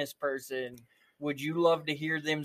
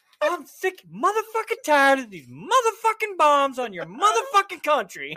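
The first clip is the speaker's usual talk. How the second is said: very high, loud swooping rant; 12 semitones higher, 7 dB louder than usual. Imagining a famous actor as president going off on another country: Samuel L. Jackson voice. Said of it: "I would love to hear Samuel L. Jackson go off".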